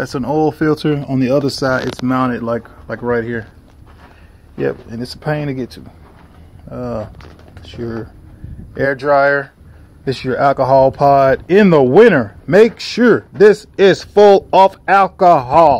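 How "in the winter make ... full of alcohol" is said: loud, high-pitched, raised-voice shouting. Speaker pointing out an alcohol pod and explaining it, yelling. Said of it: "I know I'm yelling".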